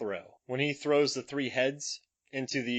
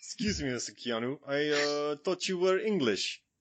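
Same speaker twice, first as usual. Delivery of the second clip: put-on, laid-on Romanian accent in English. In a comedy sketch, a character addresses another character, romanian accent. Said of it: "a British guy doing a Romanian accent".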